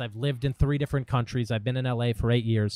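normal talking voice

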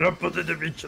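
put-on monster voice. Speaker tries to imitate Bowser while others plead: Bowser impression. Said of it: "Sto cercando di imitare Bowser".

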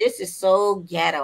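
ordinary talk, nothing marked

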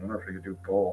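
muttered under breath. Voicing a character in a game scene: muttered under his breath. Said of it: "under his breath".

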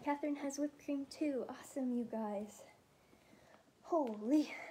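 out of breath, winded. Thanking viewers while whipping cream in a jar, out of breath. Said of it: "I'm out of breath".

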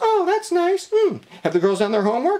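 silly, very high, swooping sing-song voice. Telling how his wife reacts to his news, in a stupid imitation of his wife. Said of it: "doing a stupid imitation like that".

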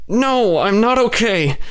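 very slow, high, forced through gritted teeth. Kay answers the narrator, who asks if she is okay, through clenched teeth. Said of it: "she exclaimed through clenched teeth".

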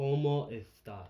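imitated lisping Spanish accent from Spain. Retelling a joke about how Spain says hello: imitating a Spanish lisp. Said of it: "you say it with a lisp".

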